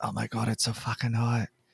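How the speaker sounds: hushed, whispered voice. Voicing a character squished in a car trunk: whispering. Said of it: "Barbara's whispering".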